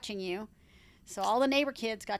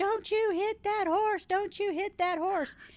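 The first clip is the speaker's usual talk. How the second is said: very high-pitched, screaming, hollering voice; 11 semitones higher than usual. Retelling how the listener screamed across the yard about a horse: imitating someone hollering and screaming. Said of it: "you started hollering and screaming across the yard".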